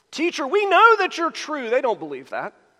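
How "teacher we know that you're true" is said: very high, sickly-sweet, obnoxious sugary tone. Reading a Bible verse aloud, voicing the questioners addressing Jesus; obnoxious reading. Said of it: "I tried to read it as obnoxious as it actually is".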